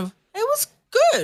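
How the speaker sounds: very high-pitched, surprised tone. Imitating a mum after a comedy show, surprised tone. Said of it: "got that surprise sound and a".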